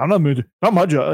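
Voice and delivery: defensive comeback. Retelling how he answered the question, imitating a defensive reply. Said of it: "It sounded real defensive".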